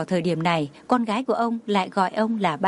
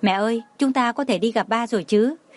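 usual speaking voice

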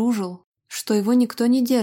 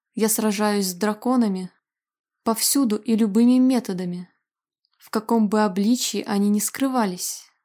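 plain reading voice

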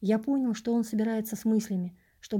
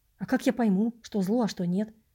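ordinary delivery, nothing marked

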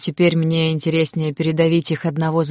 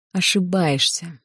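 almost inaudible, faint whisper. Narrator reads a chained prisoner speaking once the footsteps fade, barely audible whisper. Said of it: "едва слышно прошептал".

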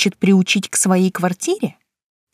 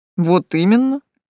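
snide, snarky, agreeing tone. A handsome young man answers the narrator's surprise about their day off; snide confirmation. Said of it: "ехидно подтвердил красавчик".

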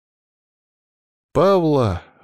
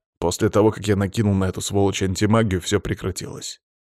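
ordinary delivery

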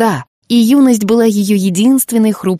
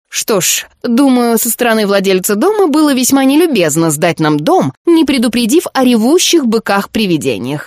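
caustic, biting, sarcastic tone; 2 semitones higher than usual. A woman in a story remarks to her companions; sarcastic remark. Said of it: "язвительно заметила Миртл".

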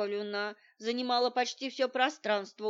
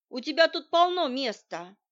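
strict, no-nonsense, stern, raised voice; 4 semitones higher, 6 dB louder than usual. Narrator reading Shura's line to Zhenya over the fence, stern. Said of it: "строго сказала она ему".

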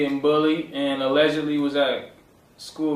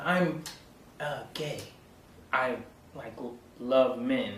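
slow, halting, hushed half-whisper; 2 semitones lower, 9 dB quieter than usual. Retelling a movie scene, imitating a half-whispered confession: imitating John Ritter half-whispering. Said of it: "He's trying to whisper it too".

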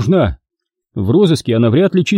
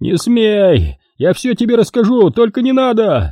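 high, frantic, desperate screamed wail, drawn out; 7 semitones higher than usual. A man begs the driver who is about to rough him up, screaming twice as loud. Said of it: "завопил с удвоенной силой".

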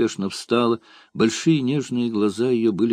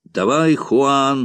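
loud, rousing, rallying shout; 4 semitones higher, 5 dB louder than usual. Mid-fight, a man turns to his comrade and urges him on, shouted. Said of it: "закричал тот".

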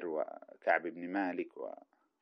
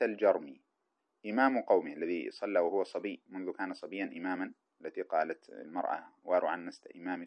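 normal talking voice

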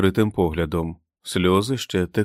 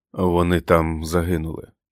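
usual speaking voice

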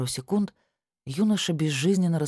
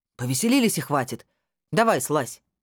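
raised voice, speaking up; 3 dB louder than usual. A policeman orders a young man down from a rope swing, raising his voice. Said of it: "повысил голос участковый".

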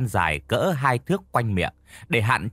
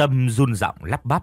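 ordinary delivery

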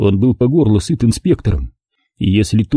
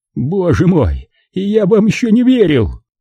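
groaning; 9 semitones higher than usual. Narrating a fight scene, reading the inspector's line as he watches, groaning. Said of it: "простонал он".

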